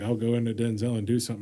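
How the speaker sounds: ordinary delivery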